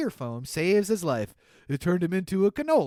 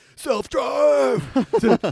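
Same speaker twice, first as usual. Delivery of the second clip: mock screaming, much higher; 7 semitones higher, 6 dB louder than usual. Telling a story, acting out a man yelling at his out-of-control car: retelling a scream. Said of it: "he starts screaming at it".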